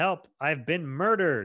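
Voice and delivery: put-on shout. Describing a stabbed character, acting out his cry for help, retelling a yell. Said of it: "He literally yells".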